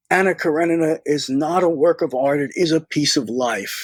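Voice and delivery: ordinary talk, nothing marked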